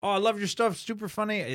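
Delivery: fake Lithuanian accent. Retelling what an audience member said after a show, in a bad Lithuanian accent. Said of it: "this is not a good accent".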